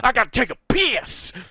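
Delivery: very high-pitched, loud, aggressive shouting. Telling a story about a man turning back toward the group, imitating an aggressive yell. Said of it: "real aggressively and goes".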